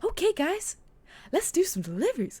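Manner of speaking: hyped-up, pitched way up, loud, swooping sing-song cheer. Describing how a man in online videos talks, imitating his energetic voice. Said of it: "his his voice is like really like".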